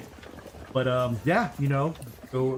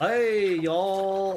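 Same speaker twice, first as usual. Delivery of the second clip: exaggerated put-on American accent, drawn-out y'all; 7 semitones higher than usual. Imitating someone greeting in a weird forced American accent. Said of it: "you just hear like the weirdest American accents".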